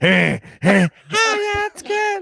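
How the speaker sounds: very high, slow, drawn-out fake girly voice. Retelling how the guy voices the doll: imitating his put-on girl voice. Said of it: "he does the voice of the girl".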